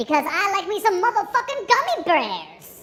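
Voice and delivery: squeaky, swooping chipmunk voice. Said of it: "That was an Alvin and the Chipmunks".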